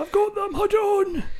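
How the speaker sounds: shrill, booming, struggling cry, high and loud. Voicing a postman carrying four hundred tapes: struggling postman voice. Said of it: "imagining a really struggling postman".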